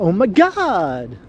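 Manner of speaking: put-on over-the-top Valley Girl cadence, god drawn out. Recalling how Los Angeles teenage girls talked, exaggerated Valley Girl cadence. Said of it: "talked in this odd way, with this odd cadence when they spoke. Kind of like".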